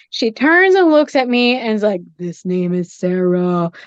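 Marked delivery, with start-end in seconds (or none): 2.2-3.7 eerie, entranced, low, slow trance voice. Retelling how his wife, seemingly in a trance, told him a name: imitating a trance-like voice. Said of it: "she was like in some kind of trance".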